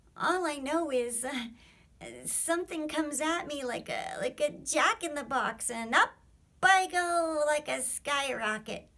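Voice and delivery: feeble squeaky voice. Reading a story aloud, a small creature speaks: little feeble squeaking voice. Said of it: "a little, feeble, squeaking voice".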